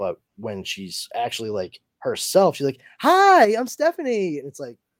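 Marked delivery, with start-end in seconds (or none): 3.0-4.4 shrill, very high, loud, sunshiny bubbly voice. Contrasting their own flat speech with how Stephanie sounds, imitating Stephanie's bubbly voice. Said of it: "she's kind of bubbly".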